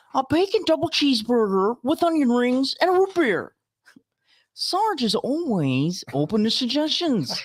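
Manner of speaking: put-on dumb voice, very high, loud, slow, drawn out. Reading Beetle's line from a comic strip: dumb Owen Wilson voice. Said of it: "your dumb Owen Wilson".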